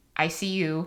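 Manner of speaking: flat, monotone, robotic voice. Retelling how a partner greets her from his laptop: imitating a robotic voice. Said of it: "in this robotic voice".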